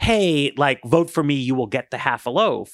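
ordinary talk

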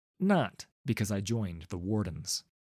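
plain

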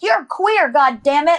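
mock emphatic, forceful, insistent yell. Retelling what she yells when the speaker is hard on themself; retelling her yell. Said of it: "she'll yell like".

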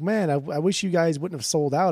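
ordinary talk

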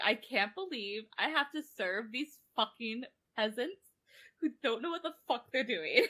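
exasperated, fed-up complaining rant. Retelling how the butler spoke to the party: imitating exasperated Harlow. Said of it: "he would get so exasperated".

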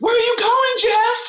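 sudden piercing shriek, very high and shrill. Retelling a moment in a game when one player screams at another, retelling a scream. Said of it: "And Jill just screams".

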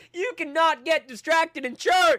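very high, loud, shrill, drawn-out scream. Retelling a priest's sermon during a loud festival: imitating a priest screaming. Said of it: "the priest is screaming".

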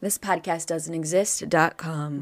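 very low, deep, soft voice. Giving the podcast's website address to the other speaker: very low voice. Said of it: "I don't know why I went real low".

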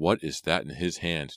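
usual speaking voice

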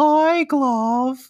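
extremely high-pitched voice at the top of range. Describing the Blue Meanie talking to Glove, in a very high Blue Meanie voice. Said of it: "the highest pitch voice you've ever heard".

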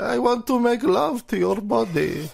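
put-on, very high villain voice. Joking about using the voice in lovemaking: Doctor Evil voice. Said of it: "do it like Doctor Evil".

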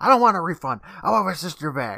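screaming, shrieking. Retelling Max demanding his sister back: Max screaming. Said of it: "Max screams".

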